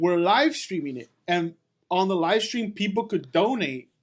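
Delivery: plain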